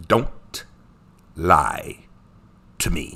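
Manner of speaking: very low, very slow, heavy pauses between every word. Quoting Professor Snape while teasing about his pauses: Professor Snape voice with pauses. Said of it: "He'd do those pauses".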